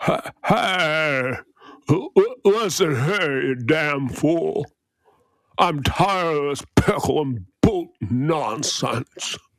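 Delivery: stumbling delivery with "hey" stretched out. Doing an impression for another speaker: Jimmy Stewart impression. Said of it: "That's my Jimmy Stewart".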